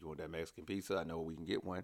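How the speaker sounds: low, soft, coaxing voice.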